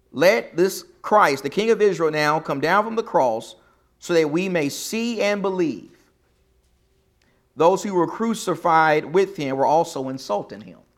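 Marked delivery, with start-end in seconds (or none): none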